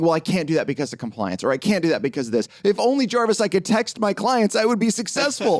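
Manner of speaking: mocking, sneering whine. Imitating advisors who blame compliance: mocking imitation of whiny advisors. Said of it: "I'm mocking that".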